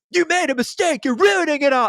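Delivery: play-acted villain screaming, very high pitched. Acting out a rom-com bad guy after the woman decides: imitating someone screaming. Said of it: "the guy just screaming like".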